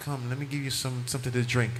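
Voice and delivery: gentle feminine tone. Acting out a wife greeting her husband home: soft feminine voice. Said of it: "they want soft, nice, feminine".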